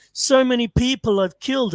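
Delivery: high, tearful, sobbing crying voice. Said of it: "he was crying".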